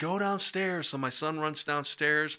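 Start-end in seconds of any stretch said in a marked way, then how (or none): 0.0-0.9 put-on screaming in a higher pitch. A man retells his wife's reaction after he fell, imitating someone screaming. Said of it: "My wife's screaming".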